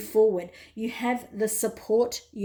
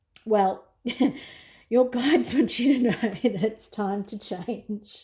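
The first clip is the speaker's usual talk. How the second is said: words broken up by laughter throughout. Giving a reading to the listener, laughing while talking. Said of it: "Sorry, I'm laughing".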